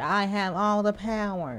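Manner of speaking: very high, slow bad-mic voice. Recalling the clan leader, speaker imitates his bad-mic voice. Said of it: "So he sounded like this".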